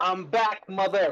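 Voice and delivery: big booming shout. Player describing what their character yells after casting, booming yell. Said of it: "I just want to yell".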